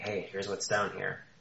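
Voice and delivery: character voice in whisper. Voicing Boothel passing on what he sees below: whisper as Boothel. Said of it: "sort of like a whisper".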